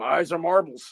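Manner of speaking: talking dog voice. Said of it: "like Doug the Talking Dog".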